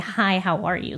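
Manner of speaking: sincere, genuine, friendly tone. Showing how a greeting sounds when meant: sincere greeting. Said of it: "actually wanting to say".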